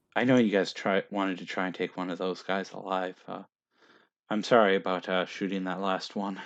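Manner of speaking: soft, hushed under-the-breath half-whisper, pulled close. A game master voices Woodburn grabbing two players, Woodburn half-whispering. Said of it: "he whispers to you".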